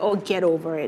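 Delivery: ordinary talk, nothing marked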